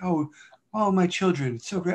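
acted bubbly, very happy, chipper, gushing teacher voice. Imitating the second grade teacher talking to the class: imitating a chipper teacher. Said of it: "She's always so chipper".

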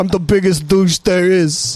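really rough, put-on New York accent. Describing the characters they played, speaker demonstrates: rough New York accent. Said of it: "really rough New York accents".

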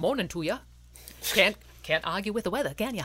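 put-on local New England accent. Retelling an uncle's greeting on a family walk around Plymouth, New England accent imitation. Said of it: "my uncle does the best New England imitation".

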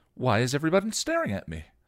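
cheerful, innocent, bright sing-song robot chirp. A cheerful robot looks around the room and asks, puzzled yet bright, why everyone is staring at her, cheerfully. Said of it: "The bot activated with a quiet click and the eyes opened. Hello, your name is [name]. You're my friend, the robot said cheerfully".

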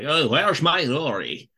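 male-sounding voice with Scottish accent. Show how reading Amy Pond's dialogue with a failed female Scottish accent came out, in a Sean Connery voice. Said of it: "it ended up sounding like Sean Connery".

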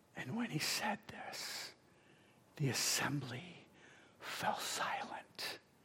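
hushed, whispered narration. Speaking to an audience about a scripture passage, whispering. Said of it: "That's why I'm whispering".

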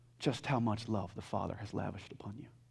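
hushed, soft, breathy whisper full of awe.

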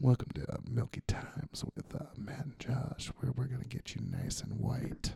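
seductive, sexy delivery. A podcast co-host tries out an intro for the show in a sexy, sultry voice. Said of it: "sexy, sultry voice".

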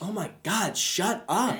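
put-on yelling, drawn out. Acting out being annoyed by a guest on a podcast: acting out yelling at phone. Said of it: "yelling at my phone".

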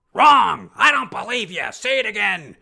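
teacher yelling. Recalling acting class, acting out how students were treated: imitating a teacher yelling. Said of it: "they weren't quite slapping and yelling at me".

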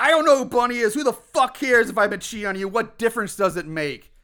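high, furious, enraged yelling. Retelling a scene where an angry husband shouts at his wife: imitating a man shouting. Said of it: "And he's shouting".

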